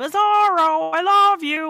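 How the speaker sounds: very shrill, booming, slow, drawn-out yell. Describing an episode, the speaker imitates a duck-like bizarro character, imitating a character yelling. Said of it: "he just keeps yelling".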